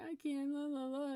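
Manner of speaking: put-on slow, drawn-out little-kid whine. Speaker shows how a little one starts whining at a parent; imitating a whiny child. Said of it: "starts doing the whining".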